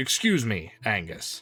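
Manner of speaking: terse, curt delivery with lips pressed tight. A man addresses Angus before guiding Bramble away; say it tight-lipped. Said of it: "he kind of goes tight-lipped and he says".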